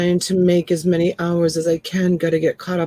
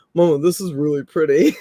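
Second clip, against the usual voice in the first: put-on low, deep young male voice. Retelling what a twenty-year-old man said about a dress: imitating a deep young man's voice. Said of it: "with the deep voice".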